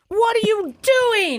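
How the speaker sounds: high-pitched yell. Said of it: "comes in yelling at me".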